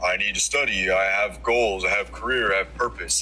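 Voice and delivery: put-on voice of a woman. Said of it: "Why did you make her voice deeper than yours?".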